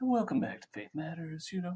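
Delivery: put-on soothing radio-host voice. Imitating the people in a clip his brother sent: NPR voice. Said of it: "they have the N P R voice going on".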